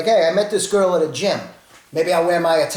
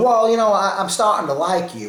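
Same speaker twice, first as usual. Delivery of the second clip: put-on rural country accent with a halting start; 3 semitones higher than usual. Recalling a dinner with a woman, imitating her country accent. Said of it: "She had a country accent, kind of like that".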